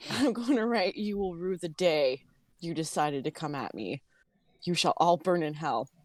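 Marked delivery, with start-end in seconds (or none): 1.0-5.9 evil, sinister demonic voice. A player writing in Abyssal to enemies before striking, in an evil demonic voice. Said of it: "evil demonic voice".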